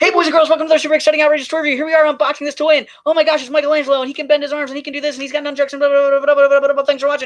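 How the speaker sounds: put-on very high, gushing, hyped kids' show host voice. Recalling his own old toy-review videos, he does the intro: mock-excited toy review host. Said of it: "and I literally go like this".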